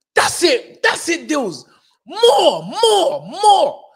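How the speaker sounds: very slow, loud, high, swooping, drawn-out holler. Retelling cheering on a boxer from ringside: imitating own shouting.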